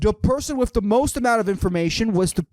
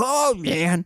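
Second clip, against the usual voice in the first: bad, clumsy, inconsistent old-man voice; 4 semitones lower than usual. Retelling what he said back, doing a bad old-man impression. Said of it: "I'm not good with fucking impressions".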